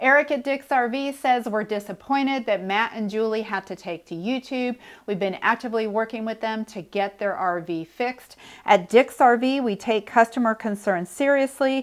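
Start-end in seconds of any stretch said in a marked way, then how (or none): none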